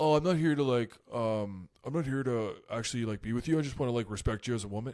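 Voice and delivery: earnest, hesitant, halting sensitive-guy voice. Retelling a reality show contestant's words: impression of Dom. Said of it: "that's a great impression of Dom".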